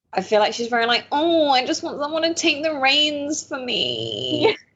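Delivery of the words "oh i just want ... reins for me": whiny high drawn-out voice. Imitating Tinsley wanting someone to take the reins: whiny Tinsley voice. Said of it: "That was the perfect whiny Tinsley voice".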